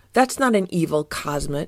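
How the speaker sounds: ordinary delivery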